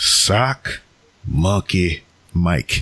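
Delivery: slow, deliberate enunciation, each word spaced apart. Reading out a listener's name carefully to avoid a slip: slow careful pronunciation. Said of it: "if I say it any faster than that".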